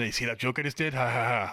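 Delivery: mock playful robotic voice. Retelling a joking moment from the show: imitating Bumblebee joking. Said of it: "Bumblebee going".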